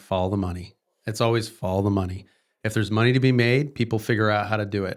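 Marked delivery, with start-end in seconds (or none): 0.0-0.7 mock deadpan delivery. Retelling what a good friend always says, imitating a friend's deadpan. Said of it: "he just looks at me deadpan and is like".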